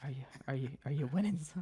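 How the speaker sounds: whispering. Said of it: "kind of whisper beside him".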